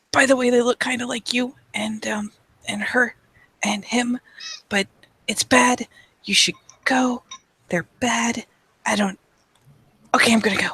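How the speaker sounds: whispered aside. Leaning in to tell someone something privately, whispering. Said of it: "gesture like come here so I can whisper to you".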